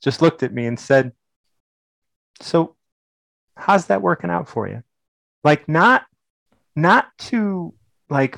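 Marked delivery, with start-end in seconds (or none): 2.4-4.8 put-on loving, sincere, affectionate tone. Retelling what someone asked at nineteen: imitating someone asking lovingly. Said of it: "the most love that I had ever felt".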